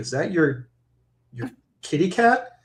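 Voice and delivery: acted whisper. Retelling what a date said at a restaurant: imitating someone whispering. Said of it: "whispered to me".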